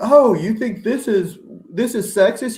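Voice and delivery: put-on very high, loud angry yell. Imitating imagined commenters who object to a take: imitating people yelling. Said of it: "there's gonna be people yelling".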